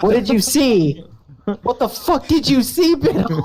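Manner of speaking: mock scream.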